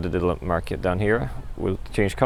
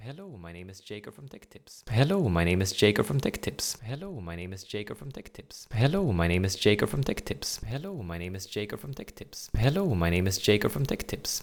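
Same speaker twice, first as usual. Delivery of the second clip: hushed, soft, low-volume speech; 5 dB quieter than usual. Testing the microphones' noise floor, the speaker repeats a test line, talking quietly. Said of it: "this is how it sounds if I talk quietly".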